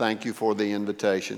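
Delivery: flat, lifeless monotone delivery. Quoting a man's reply to the host pastor, imitating a flat monotone. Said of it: "in a monotone".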